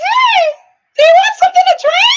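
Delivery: put-on very high, loud giant-bird puppet voice. Retelling what a man said at a party: imitating Big Bird voice. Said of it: "Big Bird Muppet voice".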